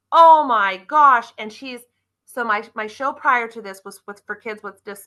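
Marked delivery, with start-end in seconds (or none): 0.1-1.3 very loud excited scream. Speaker recounting a girl at a car show, retelling her scream. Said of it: "she comes around and she screams".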